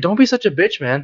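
calm, cool, goading, needling taunt. Retelling a friend calmly goading them over spicy food, imitating a calm taunt. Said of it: "calm and antagonizing me".

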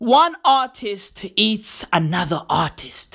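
broken, halting speech chopped into bits. Mocking how an artist speaks, words left out of sentences: imitating David Datuna's broken speech. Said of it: "He's like".

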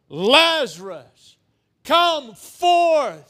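ringing, high-pitched, commanding call at full volume. Speaker retelling the Bible story of Lazarus, acting out the loud call. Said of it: "says with a loud voice".

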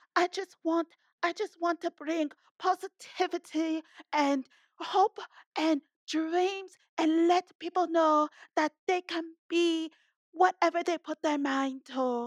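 accurate put-on woman's voice. Showing someone that she is not that hard to imitate, spot-on imitation of a woman. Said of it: "she got this spot on".

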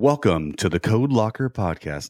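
put-on announcer voice with announcer-style delivery. Introducing the hosts Justin and Shane as a joke: announcer voice. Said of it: "An announcer voice".

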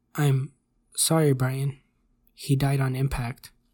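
ordinary delivery

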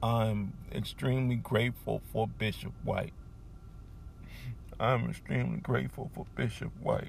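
moved, emotional, hushed, breathy near-whisper. Speaker thanking their bishop after his health challenges, getting emotional. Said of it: "I'm getting emotional because of my bishop".

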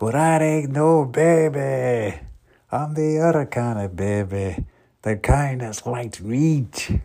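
very high, loud put-on Scottish accent, "baby" drawn out. Retelling a movie character's comment, in a put-on scottish accent. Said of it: "that's the Scottish accent".

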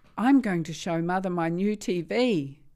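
proud, excited boasting. Narrating a story, Abby speaks to her grandfather, proud. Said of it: "she said proudly".

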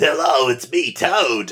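slow, drawn-out Brooklyn heavy-smoker voice. Speaker recalls how the cartoon character always talked, Toad cartoon voice. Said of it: "he just sounds like a brooklyn heavy smoker".

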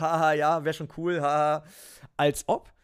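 mock laughing chatter, very slow and drawn out. Retelling how everyone at the table laughed at his racing plans, imitating people laughing. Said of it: "haben natürlich am Tisch alle gelacht".

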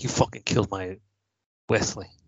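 plain

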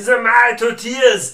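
put-on very loud, high, barked Austrian accent. Imitating a comedian's famous impersonation: Arnold Schwarzenegger impression. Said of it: "He did a great Arnold Schwarzenegger's impersonation".

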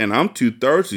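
plain reading voice

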